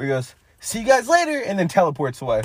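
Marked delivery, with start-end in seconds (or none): 0.6-1.4 cartoon hero voice pitched way up. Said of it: "He does, like, the Goku thing, where he goes".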